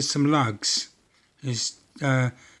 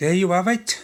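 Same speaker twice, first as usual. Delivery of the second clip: clumsy, amateurish, put-on Welsh accent; 4 semitones higher than usual. Repeating a phrase the way they say it in Wales; bad Welsh accent. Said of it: "My Welsh accent's not too good".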